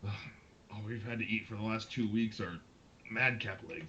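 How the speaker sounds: muttering under breath. Narrator voicing a character eating the heroes' feast, muttering under his breath. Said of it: "he he remarks under his breath".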